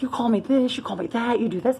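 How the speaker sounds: mock angry screaming yell. Retelling a fight with her ex, imitating someone screaming. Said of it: "he just like started screaming".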